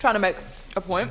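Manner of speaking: words pushed out through a mouthful, chewing. On a show, the speaker keeps talking while eating; talking with mouthful of burger. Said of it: "got a mouthful of burger".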